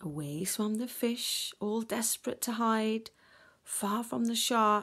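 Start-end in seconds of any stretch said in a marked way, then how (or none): none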